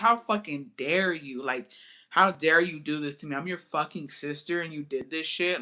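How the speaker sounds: crying, furious, tearful angry rant. Retelling a fight with a sister, imitating own crying rant.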